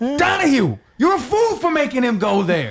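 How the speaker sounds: very high, furious, scolding outburst. Performing the same line in another emotion: angry. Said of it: "if I was, like, angry".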